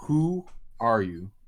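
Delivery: voice booming like thunder from above. Game master voicing a being that questions a paladin, booming voice. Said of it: "the voice booms".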